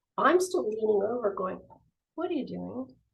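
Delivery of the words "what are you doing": very quiet, hushed, barely audible voice. Retelling a tense street standoff, leaning toward a kid: retelling speaking very quietly. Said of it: "we're saying it so quietly".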